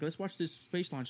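plain

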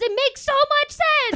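very high, loud, thrilled excited burst. Retelling how Jamie reacted to the explanation: imitating Jamie getting excited. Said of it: "getting all excited".

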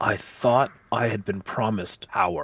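soft, muttered aside under the breath. A player's character, before aiming a finger down the well, muttering to himself. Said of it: "I'm going to mutter to myself".

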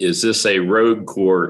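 normal talking voice

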